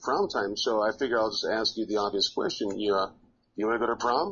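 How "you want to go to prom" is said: playful, joking, teasing tone. Recalling asking her to prom, retelling a joking question.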